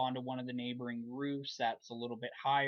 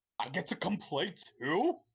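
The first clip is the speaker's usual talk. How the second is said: happy, cute pet dog voice, sing-song; 4 semitones higher, 4 dB louder than usual. Narrator voices a happy dog character next to the players: dog voice. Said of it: "I'm using the voice".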